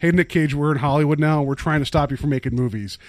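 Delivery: ordinary delivery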